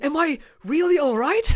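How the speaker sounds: high, over-the-top, earnest anime-hero voice. Mocking how an anime voice actor talks: put-on sincere anime-hero voice. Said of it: "No one talks like that".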